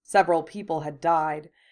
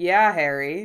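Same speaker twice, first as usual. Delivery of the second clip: amused, louder; 6 dB louder than usual. A man joins others pressing a young man to explain: amused. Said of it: "Bill said in amusement".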